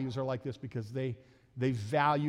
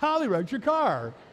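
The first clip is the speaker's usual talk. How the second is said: very high, raised, cheerful, happy calling out; 11 semitones higher, 7 dB louder than usual. Father retelling what his son told him, retelling Chuck's line cheerfully. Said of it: "Kind of cheerfully".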